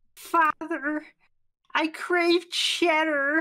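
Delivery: very high, loud cartoon character voice. Reading a line as another character, in a Carl Wheezer voice. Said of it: "Was that Carl Weezer from Jimmy Neutron?".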